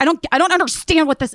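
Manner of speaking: mock yelling. Retelling a phone call where a man yelled at a volunteer: imitating someone yelling. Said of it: "he was, like, yelling at me".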